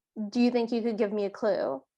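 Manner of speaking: imitated, completely flat deadpan tone. Acting out what a woman said while retelling a story; mock-deadpan delivery. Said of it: "she's like completely deadpan".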